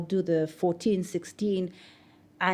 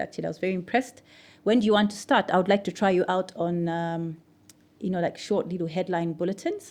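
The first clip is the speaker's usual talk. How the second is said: normal talking voice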